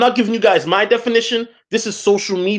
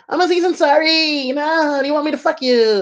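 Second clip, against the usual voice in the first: quick, fast, high-pitched voice; 7 semitones higher than usual. Recounting what a man asked a woman: Aziz Ansari impression. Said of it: "That's his voice".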